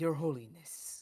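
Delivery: unconvincing, badly done put-on Spanish accent. Player asked to put on a Spanish accent for the group, failed Spanish accent. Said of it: "That's not very Spanish".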